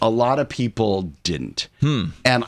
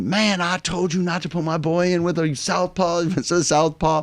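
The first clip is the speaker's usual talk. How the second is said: mock furious, high, angry screaming; 8 semitones higher than usual. Retelling how a man on the phone started screaming at him: retelling his screaming. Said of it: "he starts screaming at me".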